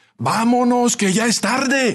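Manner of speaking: shrill, high-pitched shouted call. Narrator reads someone shouting from the back seats, shouted. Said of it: "gritó alguien".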